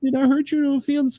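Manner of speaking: whining voice, pitched way up. Imitating a houseguest whining to Morgan: imitating whining. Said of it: "he'll do the whining stuff with Morgan".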